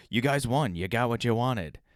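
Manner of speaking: put-on weak New York accent. Explaining a reference, quoting Cuomo on TV in a New York accent. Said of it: "I don't have a good New York accent".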